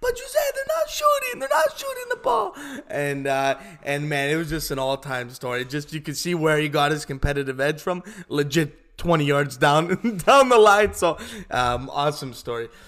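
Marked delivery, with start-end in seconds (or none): 0.0-2.6 very high, loud, indignant shout. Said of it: "And she goes".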